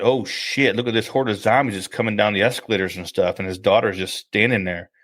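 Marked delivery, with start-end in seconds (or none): none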